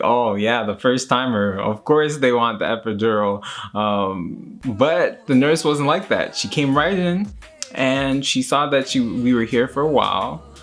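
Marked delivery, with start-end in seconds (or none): none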